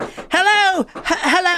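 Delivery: put-on very high, English-sounding accent. Retelling a story, voicing a woman knocking on a neighbor's door at 3 a.m., English-sounding accent. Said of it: "That sounded English".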